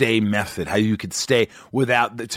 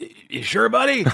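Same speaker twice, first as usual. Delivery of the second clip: very high, squeaky, rough, creaky, hesitant stammering voice; 12 semitones higher than usual. Retelling what a crew member said when invited out: imitating J D's way of talking. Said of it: "That's how he talks".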